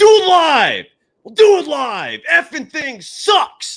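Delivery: very loud, high-pitched, drawn-out ranting outburst. Retelling a famous recording, imitating Bill O'Reilly ranting. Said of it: "he goes".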